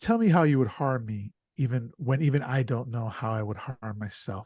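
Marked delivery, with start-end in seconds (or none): none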